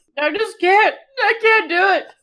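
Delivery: high, ugly crying, talking between sobs. A player breaking down during an emotional scene with the group: ugly crying. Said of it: "Ember breaks down ugly crying".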